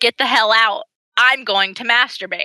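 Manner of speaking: mock sassy tone. Retelling what a woman said to her new dresser, mock-sassy. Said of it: "she gets like so sassy".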